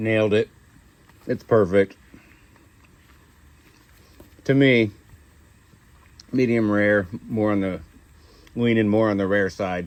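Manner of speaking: speaking with mouth full of food. Tasting the cowboy steak on camera, the host speaks mid-bite, talking with mouth full. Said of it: "Let me finish chewing".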